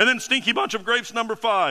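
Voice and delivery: voice breaking mid-phrase. Speaker works through a numbered list in a talk; voice cracking. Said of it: "my voice is cracking".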